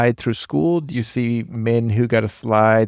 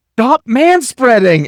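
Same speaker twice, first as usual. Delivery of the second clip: very high-pitched, loud call-out; 12 semitones higher, 7 dB louder than usual. A father retells his daughter calling him out on a plane, saying it really loud. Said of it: "She'll say really loud".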